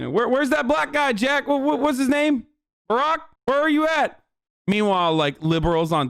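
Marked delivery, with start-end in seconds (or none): 0.1-4.2 high, befuddled, lost, puzzled stammering. Mocking how a politician might sound, confused: Joe Biden impression.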